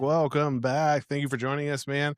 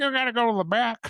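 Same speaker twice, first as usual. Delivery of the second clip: high-pitched puppet-style character voice; 8 semitones higher than usual. Joking that Bert plays the bus driver who orders someone back: Bert voice.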